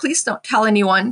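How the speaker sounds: whispering. Retelling a secret plea to Christine about running away: retelling own whisper. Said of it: "And I whispered".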